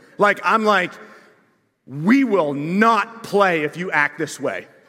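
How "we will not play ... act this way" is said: stern, firm, full dad voice laying down the law. Retelling telling off a boy who kicked the wall, going full dad. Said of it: "go full DAD on him".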